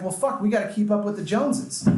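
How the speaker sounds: ordinary delivery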